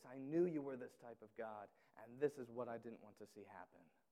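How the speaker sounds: mock grievance thick with disgust. Speaker acting out a biblical figure's complaint to god, retelling a disgusted complaint. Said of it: "You hear the disgust in his voice".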